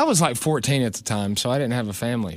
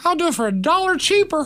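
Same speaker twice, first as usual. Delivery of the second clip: very high, deliberately horrible put-on voice. Acting out what Nine would have said about a job: Nine impression. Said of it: "That's my impression of Nine. It's horrible".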